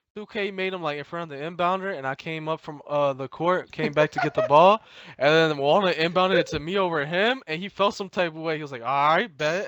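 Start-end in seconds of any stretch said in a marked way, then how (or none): 8.9-9.7 irritated, mad, put-out delivery. Speaker retells a player's reaction after an inbound pass went over him, imitating a mad reply. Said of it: "and like he was mad".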